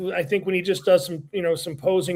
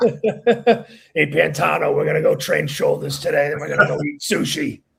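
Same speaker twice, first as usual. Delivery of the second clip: own voice made slightly deeper, gravelly, raspy; 4 dB louder than usual. Asked for an impersonation, doing Jose: Jose impersonation. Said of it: "do a Jose impersonation".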